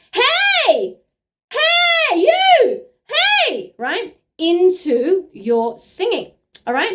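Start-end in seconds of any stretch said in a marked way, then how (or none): 0.2-3.8 very high, loud, very slow stretched calling voice. Demonstrating calling to a friend across the street; high calling voice. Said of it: "your high sounding calling voice".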